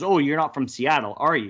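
ordinary talk, nothing marked

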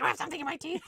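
aggressive, confrontational tone. Mocking how the heroine's line sounded: imitating an aggressive reading. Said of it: "It literally sounds like she's like".

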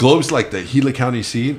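ordinary talk, nothing marked

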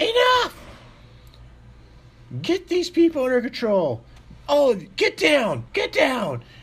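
shrill, loud, high, swooping screaming. Narrating a scene as a woman character, screaming out. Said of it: "she screams out and she goes".

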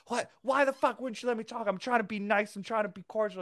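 mock outraged old man tirade, very high-pitched. Retelling a grandpa's outburst after leaving a bar: imitating a furious grandpa. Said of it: "my grandpa's fucking furious and is like".

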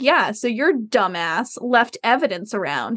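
play-acted tone dripping with contempt and scorn. Retelling how a character spoke to her underling: imitating a disdainful tone. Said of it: "with just such disdain in her voice".

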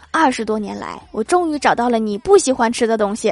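ordinary delivery

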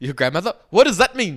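loud, put-on Indian accent. Joking about a tattoo with the other speaker, in a put-on indian accent. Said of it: "You're trying to put on an Indian accent".

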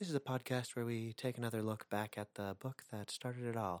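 very quiet, soft public radio interviewer voice, easing in. Podcast host opening the show, switching into a public-radio style: Terry Gross voice. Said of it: "transition into the like Terry Gross".

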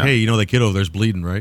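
ordinary talk, nothing marked

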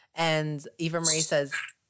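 ordinary talk

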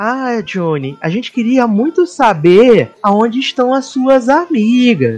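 mild, calm, kindly, meek little voice. Retelling how an old man questions a prisoner: imitating a soft gentle voice. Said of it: "vozinha mansa".

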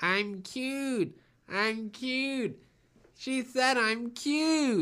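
very high, very slow, nasal cartoon animal voice. Speaker acts out a young animal from a TV special after being called cute: nasal young cartoon animal voice. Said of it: "he sort of sounds nasally like that".

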